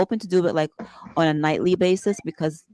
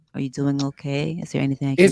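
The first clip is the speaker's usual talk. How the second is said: sultry, sensual voice, much lower; 2 semitones lower than usual. Demonstrating a sensual side of the bit, in a sensual voice. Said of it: "it does tap into a little sensual".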